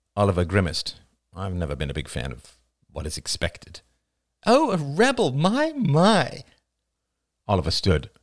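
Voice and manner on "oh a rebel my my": very high, slow, teasing, mocking baby talk. Narrator reads a character's reply to Oliver: mocking baby talk. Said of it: "What's with the stupid baby talk?".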